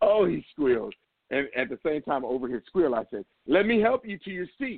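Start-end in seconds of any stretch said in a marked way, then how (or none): 3.5-4.8 put-on, very loud, pitched-up delivery. Retelling squeezing a man's wrist and speaking over his squeal, retelling it real loud. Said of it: "I said it real loud".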